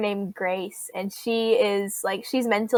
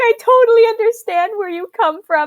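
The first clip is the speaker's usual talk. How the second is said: put-on crying voice, higher and louder; 12 semitones higher, 9 dB louder than usual. Retelling an anime scene where a character cries: imitating Vash crying. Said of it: "and he's, like, crying. He's like".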